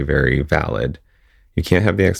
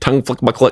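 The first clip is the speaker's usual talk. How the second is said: quicker pace, higher pitch; 8 semitones higher than usual. Repeating the phrase after being asked to say it faster: said faster. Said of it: "Say it faster".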